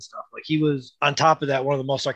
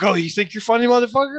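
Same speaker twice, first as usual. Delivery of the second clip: put-on sarcastic comedian tone, higher, louder; 9 semitones higher, 4 dB louder than usual. Imitating what sarcastic comedians say to each other, mock-sarcastic comedian. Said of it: "those sarcastic comedians".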